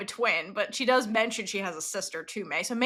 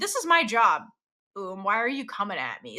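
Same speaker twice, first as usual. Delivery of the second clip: irritated, annoyed, dismissive tone; 2 semitones lower than usual. Retelling a character's reply when questioned about her job: imitating a dismissive, annoyed reply. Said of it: "she's really dismissive and annoyed with Oom".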